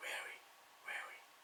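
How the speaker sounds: very soft whisper, barely any voice. Voice exercise, repeating a word on the coach's cue, in a whisper. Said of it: "Back to a whisper".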